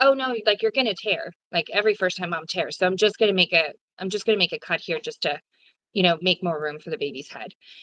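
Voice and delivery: play-acted casual, nonchalant, matter-of-fact, offhand. Retelling what the doctor said about cutting: imitating someone nonchalant. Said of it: "very, um, nonchalant was like".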